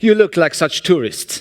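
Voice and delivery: put-on French accent throughout. Retelling what a man said beside the Eiffel Tower: French accent. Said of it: "in the French accent".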